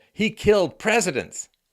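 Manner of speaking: high, loud, excited exclamation.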